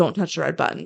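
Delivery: plain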